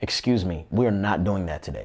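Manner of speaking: mock firm, commanding tone, no room to argue. Recalling having to control his voice: reenacting a commanding tone. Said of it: "you could tell by my tone that I'm giving you a command".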